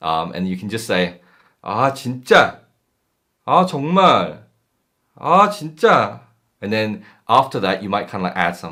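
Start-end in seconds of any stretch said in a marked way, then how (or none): 1.6-6.2 very slow, drawn-out, raised, fed-up annoyed exasperation. Showing a learner how to sound exasperated: annoyed tone. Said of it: "annoyed tone".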